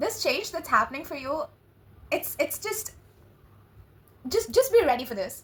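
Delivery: excited, stumbling stutter tripping over repeated words. Addressing the listener directly, stuttering and excited. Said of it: "God, why am I stuttering?".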